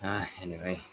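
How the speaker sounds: disappointed, let-down, dismissive tone. Answering another speaker about a game boss fight, disappointed. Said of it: "You sound disappointed".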